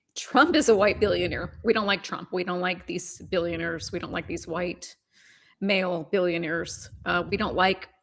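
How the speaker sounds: ordinary talk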